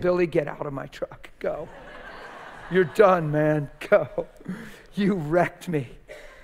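blubbering out-of-control bawling, sobbing through the words. Retelling telling billy to leave the truck: retelling crying while speaking. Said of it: "I'm sitting there bawling".

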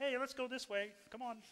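cartoon frog puppet voice. Describing voices calling a flock of sheep, one in a Kermit the Frog voice. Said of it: "Kermit the Frog's like".

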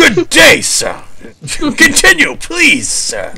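very high, loud, shrill, slow and swooping. Quoting a film ending after being told someone sounds like it: Gene Wilder impression. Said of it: "Gene Wilder at the end of, uh, Charlie and the Chocolate Factory".

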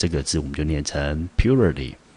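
first syllable PU of purity hit with stress.

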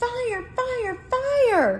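very high, stretched-out, alarmed shouting cry. Reading a story aloud, a character calling out at the fire station, shouting. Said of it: "she shouted".

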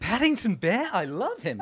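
put-on terrible Australian accent, loud and swooping. Retelling a phone call about Paddington, the speaker quotes Nicole in a terrible Australian accent as Nicole. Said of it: "Terrible Australian accent".

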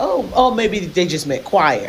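plain

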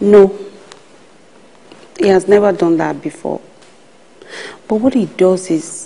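tearful, crying speech. In a drama, a character answers a question about a man, crying while talking. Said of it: "please, stop crying".

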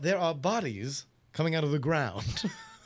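polished, erudite, refined British English accent. Like a calm gunfighter calling out what is there: erudite british accent. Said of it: "in the most erudite British accent".

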